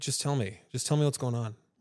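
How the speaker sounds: plain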